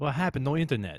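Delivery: put-on Greek accent, poorly done. Trying a Greek accent after being asked for one: bad Greek accent. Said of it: "Can you do a good Greek accent?".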